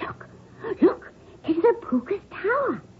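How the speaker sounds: hushed, soft, breathy under-the-breath whisper. Retelling what a boy said near the tower: imitating a whisper. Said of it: "I heard one of them whisper".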